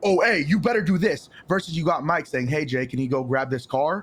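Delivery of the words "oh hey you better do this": hostile, aggressive, angry tone, high pitched. Contrasting ways someone might give an order, imitating an angry little man. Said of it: "an angry little man coming at you with a tone, angry as fuck".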